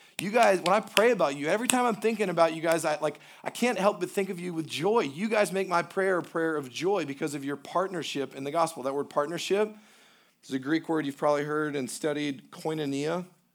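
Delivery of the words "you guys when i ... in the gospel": ordinary delivery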